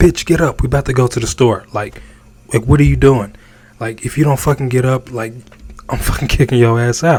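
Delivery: quiet, commanding, bossy, domineering, rattled off fast. Contrasting a polite request with the pimp way, demonstrating the domineering version. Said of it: "which is domineering".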